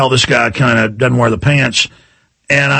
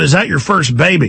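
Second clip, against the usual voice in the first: ordinary talk, nothing marked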